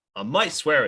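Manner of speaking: usual speaking voice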